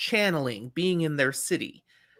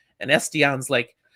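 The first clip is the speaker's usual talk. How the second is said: ordinary talk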